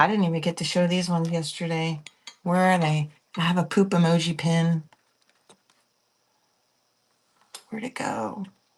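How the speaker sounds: quiet, hushed whisper. Showing off pins while people are still sleeping, whispering. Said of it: "I know I'm whispering".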